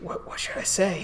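quiet, hushed, breathy whisper. Voicing a character who whispers to you while a supervisor calls down, whispering. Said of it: "As he kind of whispers to you".

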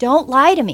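loud, frustrated mock scream. Recalling screaming at her as a young child, retelling a scream. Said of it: "I remember screaming".

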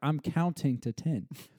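normal talking voice

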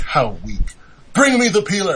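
swooping, animated talking-potato character voice. Retelling a cartoon scene, voicing the potato character. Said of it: "the potato's like".

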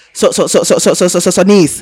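country voice rushing words, very fast, rattling off repeats. Retelling a phone call from an uncle from the country, imitating fast-talking uncle. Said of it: "He talks really fast".

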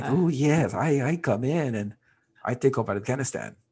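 put-on, fake Latin accent. Speaker acts out china's reply in a mock latin accent. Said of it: "I'm glad he had a Latin accent".

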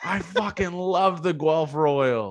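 imitated screaming. Retelling a drunk fan yelling between pitches: imitating a fan screaming.

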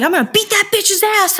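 full-on, high scream at the top of the lungs. Retelling a headphone call with an old house lead: retelling a scream. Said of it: "And I'm screaming".

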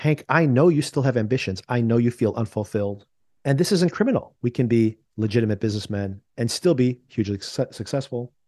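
ordinary talk

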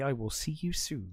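put-on ominous voice. Recapping a scene where a character leaves: retelling an ominous line. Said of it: "he does very ominously say".

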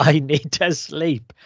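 put-on very slow, stretched, weary, mild cry. Retelling a character stopping on a mountain in the rain: imitating Ansel screaming. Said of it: "just screams".

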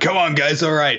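forced, put-on enthusiasm, high and hyped-up. Speaker shows the fake enthusiasm he can't muster: fake, put-on enthusiasm. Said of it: "garner up that fake enthusiasm and be like".

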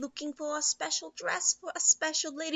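high put-on British accent. Retelling a movie scene as Madame Carp: put-on British accent. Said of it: "She also has a British accent".

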